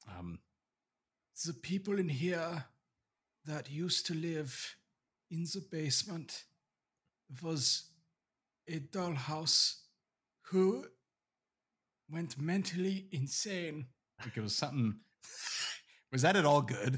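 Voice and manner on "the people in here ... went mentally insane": high, slow put-on German accent. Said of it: "recall how to do Werner Herzog".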